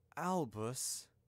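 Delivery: quiet, soft, hushed voice. McGonagall addresses Albus, quietly. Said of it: "McGonagall said quietly".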